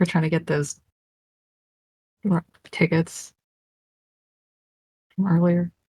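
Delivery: speaking in a whisper. Talking in front of a shopkeeper about getting tickets: whispering. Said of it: "I say this, like, whispering".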